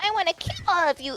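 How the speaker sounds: put-on little girl voice. Describing a game's little girl character, imitating the little girl. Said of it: "the little girl. She just goes".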